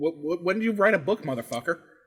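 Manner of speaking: ordinary talk, nothing marked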